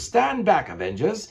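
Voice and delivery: put-on slow, swooping, laid-on British accent. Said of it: "That's my British accent".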